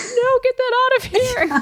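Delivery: high-pitched, screamed, forceful delivery. Retelling how a mom reacted to a dead bird: imitating mom screaming. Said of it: "my mom screamed".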